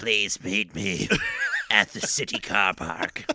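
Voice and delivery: put-on disguise, faintly British, low and swooping. Speaker demonstrates the voice they would use to disguise themselves: disguised voice, a little British. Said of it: "Why'd you make him British?".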